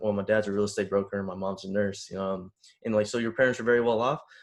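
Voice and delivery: ordinary talk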